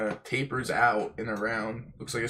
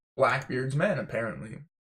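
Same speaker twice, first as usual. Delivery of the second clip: usual speaking voice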